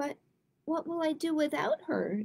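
squeaking. A narrator reads Mouse as a storm comes on, squeaking. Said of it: "squeaked Mouse".

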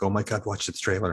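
ordinary talk, nothing marked

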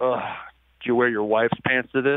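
put-on voice of a grunting, uninterested man. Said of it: "He just looks at me and grunts and goes".

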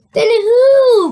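high, loud cry, who stretched long. Reading a child's question to their grandfather in a story, crying out. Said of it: "cried Charlie".

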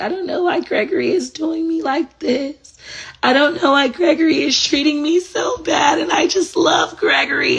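very high, sobbing, tearful crying voice. Retelling what she used to say to her mom about her cheating partner, imitating her past crying. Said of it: "I used to cry and I'd be like".

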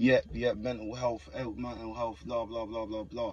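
ordinary talk

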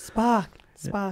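tentative put-on Welsh accent. Showing listeners how someone's dad talks: first attempt at a welsh accent. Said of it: "a first attempt at a Welsh accent".

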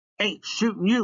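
high, whinging, complaining whine. Told by Maniac to stop shooting, Russell answers him, whining. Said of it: "Russell whined".

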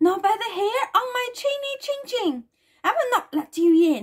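frightened, high little crying-out voice. Narrator reading the little pig's reply to the wolf at the door, frightened cry. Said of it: "cried the frightened little pig".

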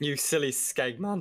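voice cracking. Teasing another player during a game, voice cracking. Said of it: "the voice crack!".

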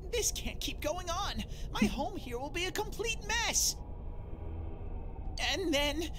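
crying all through, tearful sobbing voice. Streamer voicing a game bear begging them to find the culprit, crying. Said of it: "What are you crying for all of a sudden?".

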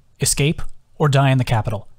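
ordinary delivery, nothing marked

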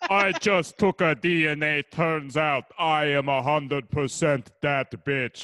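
put-on alien villain voice. Delivering a joke line to the others in a Jabba the Hutt voice. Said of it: "he was doing it like a Jabba the Hutt kind of accent".

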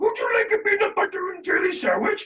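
goofy put-on voice, very high and loud. Speaker shows how they grab a room of kids' attention: silly voice. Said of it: "Silly voices are what I also use".

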